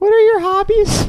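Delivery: put-on squeaky six-year-old voice, very high and loud. Mocking a co-host as a six-year-old doing a podcast: imitating Fred like a six-year-old. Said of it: "like, a six-year-old".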